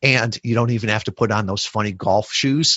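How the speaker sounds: ordinary delivery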